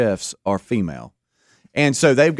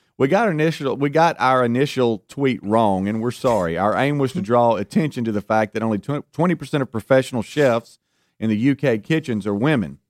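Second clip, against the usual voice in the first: ordinary talk, nothing marked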